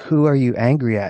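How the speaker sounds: ordinary talk, nothing marked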